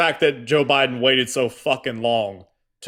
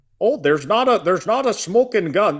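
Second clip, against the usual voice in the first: put-on Midwestern accent, pitched up; 7 semitones higher than usual. Retelling what Ken Martin kept saying over and over: Ken Martin Midwestern accent. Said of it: "a Midwestern whatever kind of accent that he has".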